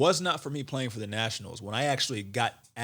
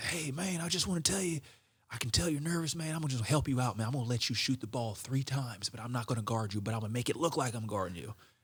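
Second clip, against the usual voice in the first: put-on heavy rural accent, laid on thick; 4 dB quieter than usual. Retelling what an opposing player he once guarded told him, thick country accent. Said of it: "He has this thick country accent".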